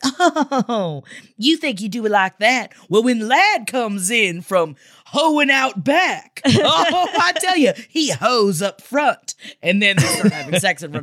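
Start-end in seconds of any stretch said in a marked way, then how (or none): 0.0-9.4 very slow, condescending put-down tone. Imitating a TV cook telling you that you did it wrong: condescending Pioneer Woman impression. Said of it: "It's gonna be very condescending".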